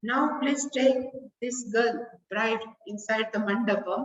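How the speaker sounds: normal talking voice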